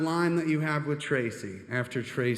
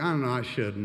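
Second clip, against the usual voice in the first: ordinary talk, nothing marked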